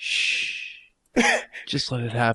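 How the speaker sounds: soft, slow, breathy drawn-out whisper. Retelling a line said while she sat there awkward: imitating own past whisper. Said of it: "I kind of happened to whisper".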